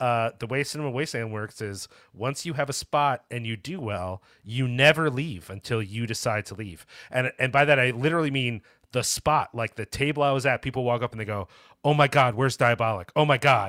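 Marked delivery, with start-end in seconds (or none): 11.8-13.7 loud, dismayed, upset acted-out outcry. Retelling fans at Cinema Wasteland finding a usual table missing, imitating upset fans. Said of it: "Like so upset that they weren't there".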